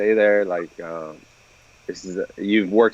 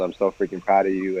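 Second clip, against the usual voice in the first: put-on tearful crying voice. Retelling a father crying over the phone: imitating a crying dad. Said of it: "he started crying over the phone".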